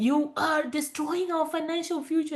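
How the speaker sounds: mock, high-pitched screaming rant. Retelling a phone call with a husband who was deployed: imitating husband screaming.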